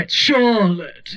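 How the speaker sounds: non-rhotic Charlotte, r sound dropped. Describing mom's friend who doesn't say the R, imitating Charlotte dropping the R. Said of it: "doesn't say the R".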